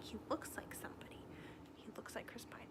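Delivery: hushed, soft, whispered musing aside.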